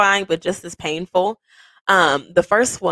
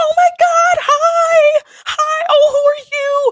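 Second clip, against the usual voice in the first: mock overexcited, very high, very slow, loud scream; 5 dB louder than usual. Recalling greeting costumed kids at the door with candy: imitating excited screaming. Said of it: "I am probably screaming".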